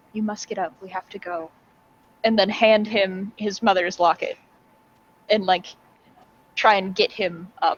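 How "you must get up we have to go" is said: very quiet, hushed, close murmur. Leaning down toward Ricardo in the scene, speaking very quietly. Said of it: "very quietly".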